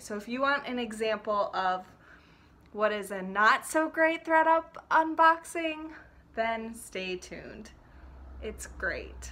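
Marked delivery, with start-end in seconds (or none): 8.4-9.3 soft, ironic, throwaway sarcastic aside. Introducing a not-so-great unboxing to viewers, sarcastic. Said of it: "That's sarcastic".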